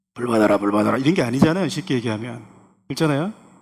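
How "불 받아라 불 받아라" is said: very low-pitched street-hawker call. Preacher demonstrates what Ananias did not do, in a street vendor voice. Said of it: "이렇게 배고기 장수 목소리 내면서".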